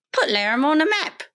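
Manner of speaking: high local small-town voice. Quoting an interviewee while the other speaker reads her story: imitating Fran Hodgetts. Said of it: "that was a great Fran Hodgetts impression".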